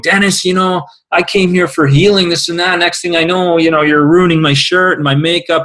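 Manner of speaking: angry, aggrieved griping. Retelling a client complaining after being splashed with water: imitating Judy's angry complaint. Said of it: "after a couple minutes of anger going".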